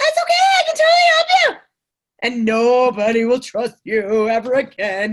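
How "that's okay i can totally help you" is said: very high, fast, nervous salesperson voice. Coaching people to sound sincere, demonstrating what not to do, nervous salesperson voice. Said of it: "We get nervous and then we do this".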